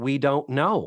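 usual speaking voice

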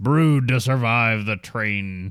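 put-on elderly royal voice. Imagining him remembering the original India Pale Ale: Prince Philip impression. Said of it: "he was old enough to be like".

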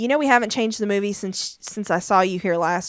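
ordinary delivery

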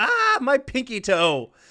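acted high, swooping, long wailing scream. Recounting a scene where an upset woman runs away, retelling a scream. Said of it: "she screams".

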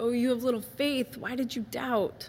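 compassionate, understanding, caring tone. Retelling Jesus rescuing drowning Peter: sympathetic tone. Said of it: "with a very sympathetic".

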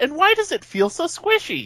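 put-on very high, swooping five-year-old's voice. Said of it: "I pictured a five-year-old kid going".

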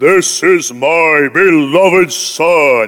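deep, majestic, very slow, booming voice. Picturing how God the Father sounds in scripture: deep majestic voice of God. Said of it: "God's voice was like".

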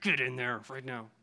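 mock, low, hushed voice through gritted teeth. Acting out an embarrassed parent ordering a child inside, through gritted teeth. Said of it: "through gritted teeth".

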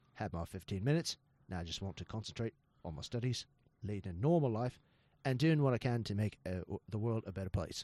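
very low, hushed, soft Australian accent. On a podcast, a speaker performs a quote for the others in an australian accent. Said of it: "that is the most accurate Australian accent".

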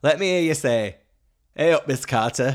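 put-on northern Yorkshire accent. Introducing a contestant, quoting her entrance line: yorkshire accent. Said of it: "I think I just did a Yorkshire accent".

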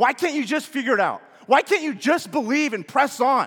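harsh scolding tone. Asking friends how they picture Jesus in moments of doubt, acting out a harsh Jesus. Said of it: "this kind of harsh tone".

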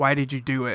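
mock lifeless, flat, going-through-the-motions delivery. Mocking an actor's line reading from the show: imitating a least inspired line reading. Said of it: "the least inspired".

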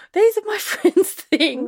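mock panicked, frantic, very high-pitched squeal. Retelling finding their things in an op shop, imitating a friend freaking out. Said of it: "my friends freaking out going".

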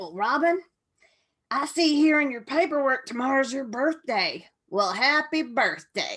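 rough, raspy, roughened speaking voice. Retelling what Cindy said when picking her up: imitating Cindy's rough smoker's voice. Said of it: "she had that rough smoker's voice".

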